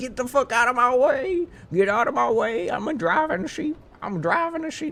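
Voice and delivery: put-on Southern accent. Playing Soul driving a sheep and hitting the horn, in a put-on voice for Soul. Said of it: "Soul doesn't actually sound like that".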